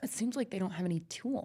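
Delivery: mimicked pointed tone. Imitating how another speaker said Toyota owners don't own tools: imitating a pointed tone with subtext. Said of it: "a tone that was like".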